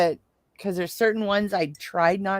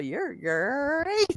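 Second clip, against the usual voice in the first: high cereal mascot voice, long drawn-out great; 6 semitones higher, 4 dB quieter than usual. Retelling what the husband said: Tony the Tiger voice. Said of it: "Tony the Tiger show".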